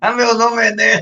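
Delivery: forceful, stressed put-on voice. After someone is said to look like Enéas, the speaker does an Enéas impression. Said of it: "ficar fazendo Enéas".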